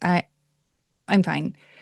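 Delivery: put-on tearful, crying voice. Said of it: "gross crying".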